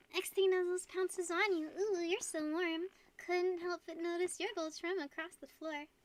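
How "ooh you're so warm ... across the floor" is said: high, flirty, put-on ooh-woo voice. In a roleplay scene, a character addresses the player in an ooh-woo voice. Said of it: "That's my ooh-woo voice".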